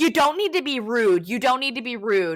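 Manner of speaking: pissy, put-out, snippy and irritated tone. Retelling what a hostile woman told the speaker and Riley: mimicking a pissy woman. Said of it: "she was super pissy".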